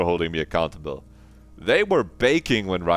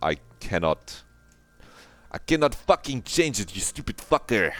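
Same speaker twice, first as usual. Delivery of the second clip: bad put-on French accent, much higher; 6 semitones higher than usual. Gamer failing to do a Disco Elysium accent, fucked-up French accent. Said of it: "just becomes fucked up French".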